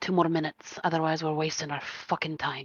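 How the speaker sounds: low muttering under the breath. Voicing a character who mutters to an ally: muttering under her breath. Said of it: "under her breath in Dwarven".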